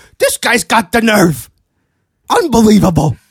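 pouty high loud voice. Defending your impression to someone who disputes it, show a pouty Don Rickles impression. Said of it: "he was very pouty".

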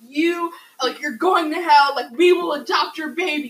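loud, yelling, screamed tirade. Retelling protesters outside a clinic: imitating protesters screaming. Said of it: "screaming at her".

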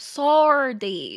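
playful put-on Australian accent. Brushing off online comments about them, the speaker adds a line in an Australian accent. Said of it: "I love the Aussie accent".

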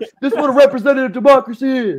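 very loud, very high drill-sergeant bark. Retelling how they address a class when teaching: imitating own yelling in class. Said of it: "I'm fucking yelling when I'm teaching".

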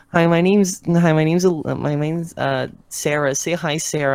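put-on high, slow, halting, stumbling little kid voice. Retelling what a kid says on a live stream: imitating a kid. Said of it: "a kid will come in and she'll be like".

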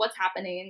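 ordinary talk

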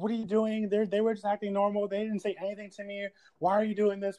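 loud shouting. Retelling how a boyfriend yelled at his girlfriend, imitating someone yelling. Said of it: "yelling at her".

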